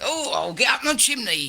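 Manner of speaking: bad put-on English accent. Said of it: "Look how bad he did it".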